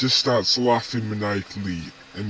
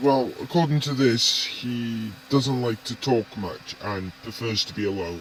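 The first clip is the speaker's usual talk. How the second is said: ordinary delivery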